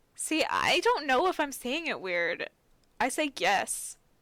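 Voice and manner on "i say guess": leaning on the u in 'guess'. Asked to say the word again, unsure of their own pronunciation: stress on 'guess'. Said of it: "You just put a little bit more emphasis in the U".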